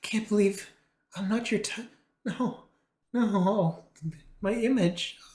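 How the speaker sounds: very high, hurt, wounded wail.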